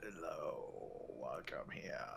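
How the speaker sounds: very soft, low, creaky and scratchy voice. Game master voicing a figure who sits up and greets the party, scratchy voice. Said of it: "in a scratchy voice says".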